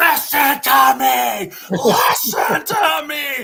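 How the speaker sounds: mock piercing, very high, very loud angry yell. Retelling how a man would slam a board, the speaker is imitating an angry outburst. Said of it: "he'd slam it somewhere".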